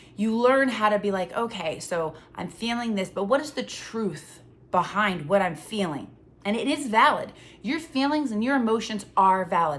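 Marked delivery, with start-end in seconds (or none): none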